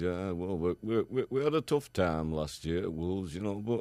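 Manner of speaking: laid-back mumble, lips hardly moving, mouth barely open. Showing how he talks to the camera, as a Mick McCarthy impression, mouth barely open. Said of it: "he doesn't seem to open his mouth at all".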